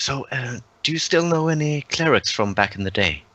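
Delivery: whispering. Playing a character who quietly asks Aiden about clerics: whispering. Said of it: "he kinda whispers to Aiden".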